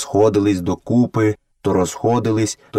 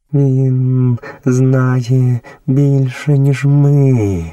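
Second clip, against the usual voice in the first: trembling, quavering, shaking voice; 3 semitones higher, 4 dB louder than usual. Reading a story, a character speaks of Kaa after escaping, trembling voice. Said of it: "тремтячим голосом сказала Багіра".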